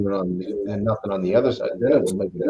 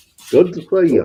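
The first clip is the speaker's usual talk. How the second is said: put-on Australian hillbilly voice, higher and louder; 8 semitones higher, 5 dB louder than usual. Greeting another speaker after being welcomed back: put-on Australian hillbilly voice. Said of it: "you sounded a little more like a hillbilly from Australia".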